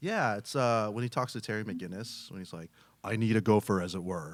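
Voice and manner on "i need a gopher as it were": silky, polished, buttery smooth voice. Asked for one, show how Batman talks to Terry McGinnis, as a Conroy impression. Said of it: "Do you have a Conroy impression?".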